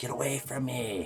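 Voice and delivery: mock yelling, high-pitched and drawn-out. Retelling how the mother yelled at the little girl: imitating someone yelling. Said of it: "that woman would sit there and yell".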